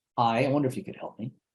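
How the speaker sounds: plain, flat voice with no smile. Demonstrating a phone request said without smiling, to sound unlike sales: not smiling. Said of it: "I'm not smiling".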